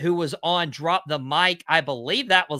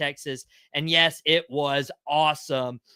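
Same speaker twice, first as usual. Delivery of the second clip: ordinary talk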